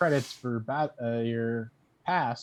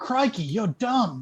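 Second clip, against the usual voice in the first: shrill, very high-pitched shout; 9 semitones higher, 3 dB louder than usual. Wishing the game's voice would scold you, yell as Steve Irwin. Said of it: "Steve Irwin to yell at me".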